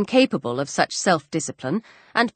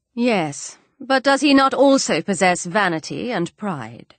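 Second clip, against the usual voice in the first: plain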